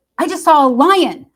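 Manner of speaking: put-on sudden, shrill, very high, loud excited shriek. Driving through the neighborhood, the speaker retells what she suddenly screamed out: imitating an excited scream. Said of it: "she screams out".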